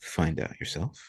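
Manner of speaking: quiet whisper with a chuckle. Voicing the Merchant King answering a player: whispering to himself with a chuckle. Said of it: "chuckles and whispers to himself".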